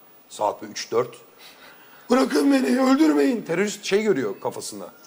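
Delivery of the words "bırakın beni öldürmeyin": mock very high-pitched, terrified, panicked shriek. Retelling how a blond guy woke at night, imitating a panicked scream. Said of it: "Abi çığlık çığlığa uyandı gece ya".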